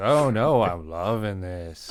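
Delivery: super sarcastic, very slow. Retelling a Kids in the Hall skit: imitating Dave Foley, super sarcastic. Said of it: "everything he said sounded super sarcastic".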